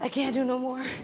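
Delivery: winded, breathless. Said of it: "I'm winded".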